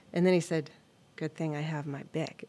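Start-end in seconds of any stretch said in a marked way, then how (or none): 1.2-2.5 mock sly, smug tone, quieter. Retelling what a student said after his pencil lead snapped: imitating a sly, smug remark. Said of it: "with a sly smile".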